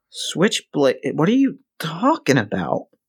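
gentle, unthreatening voice. A narrator voicing a character accused by someone not seen in years, softer, less menacing voice. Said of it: "The next thing you notice is he's not looking great. I mean, Christ, like, you know the road is hard, but the kid looks 20 years older. ... except softer, less menacing".

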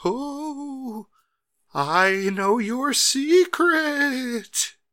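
the oh dragged out, very high-pitched. Retelling what Paul Bearer says when he comes out: failed Paul Bearer impression.

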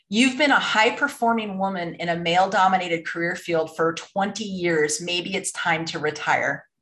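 ordinary talk

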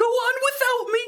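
badly done cartoon slacker voice, way up high. Narrating a scene where a character dives in front of the shots, in a bad Shaggy voice. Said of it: "That was a really bad Shaggy voice".

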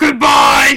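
very loud, full-volume shouting. Saying goodbye to listeners in a co-host's voice: Rika's voice. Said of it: "I'm gonna talk in Rika's voice".

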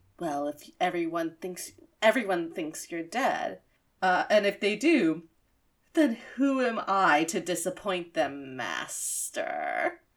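put-on sultry voice, low. Speaker recapping a scene, one character to his master, sensual Steve Blum voice. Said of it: "in the most sensual voice Steve Bloom".

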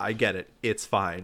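ordinary talk, nothing marked

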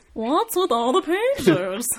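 very drawn-out, stretched-out stand-up style delivery. Joking about a movie scene with another speaker: Seinfeld impression. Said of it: "that's my Seinfeld impression".

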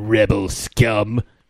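grand, dramatic, deep, epic commanding voice. Retelling a Star Wars scene where a guy addresses everyone captured, epic voice. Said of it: "comes in his epic fucking voice".

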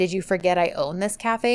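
ordinary delivery

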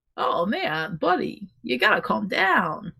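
very slow, swooping movie-star drawl with roaming pitch. Imagining a celebrity giving a pep talk: Christopher Walken impression. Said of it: "and Christopher Walken is just like".

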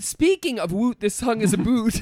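put-on Canadian accent.

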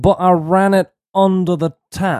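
high-pitched, drawn-out, nasal voice. Doing an impression on the fly after being asked: terrible nasally Bill Nye impression. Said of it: "here's my terrible Bill Nye".

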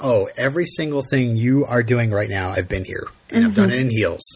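ordinary delivery

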